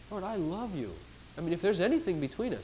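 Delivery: sweet, gentle, tender and fearless way of speaking. Showing how one now speaks to the lord, in a sweet tone. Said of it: "it's a sweet way now".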